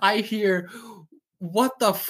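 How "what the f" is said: high yell breaking off mid-word. Retelling what was heard from the bathroom: imitating someone yelling. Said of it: "she's yelling from the bathroom".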